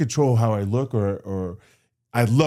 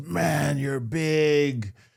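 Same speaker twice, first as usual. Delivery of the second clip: mock scream, higher; 4 semitones higher, 4 dB quieter than usual. Retelling what a stranger said to the speaker: imitating a man screaming. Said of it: "he was kinda screaming it".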